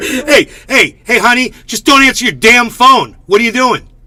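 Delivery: offhand, fatherly tone. Imitating how a man talks to his daughter on the phone. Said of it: "that's how he talks to his daughter".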